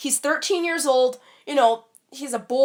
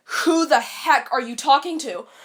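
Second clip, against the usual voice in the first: mock-furious, angry tone. Retelling how a woman went ballistic at the speaker: imitating someone furious. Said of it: "from her voice that she was completely mad".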